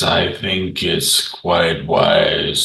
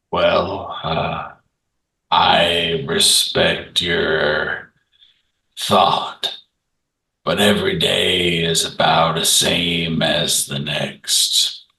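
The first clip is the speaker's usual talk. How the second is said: slow, unhurried way of talking. Playing a character answering another's thought: slow-talking character. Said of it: "always try and make sure he's topped off because when he starts slurring his words in the slow way he talks, / always try and make sure he's topped off because when he starts slurring his words in the".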